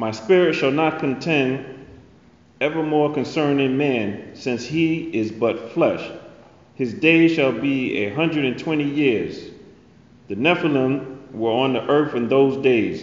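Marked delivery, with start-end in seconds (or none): none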